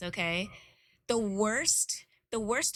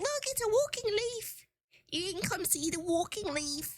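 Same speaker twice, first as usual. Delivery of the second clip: very high, put-on British accent; 11 semitones higher than usual. Retelling showing your daughter a walking leaf: put-on british accent. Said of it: "spoken in like a British accent".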